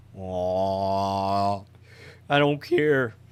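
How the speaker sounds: loud, very drawn-out, slow, voice cracking on "aw". Reacting to a cat coming into view: voice cracking. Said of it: "my voice cracked".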